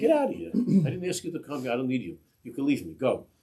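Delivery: put-on furious, loud, high, swooping yell. Retelling how a man yelled at all the Chassidim to leave: retelling a yell. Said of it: "he starts to yell at all the Chassidim".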